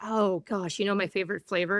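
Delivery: ordinary talk, nothing marked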